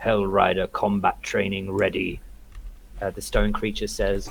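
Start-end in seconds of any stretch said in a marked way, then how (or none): 0.0-2.2 deep, rough, gravelly voice rumbling from deep within. A game narrator voices a stone creature holding a club: gravelly voice from deep within. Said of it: "a gravelly voice from deep within go".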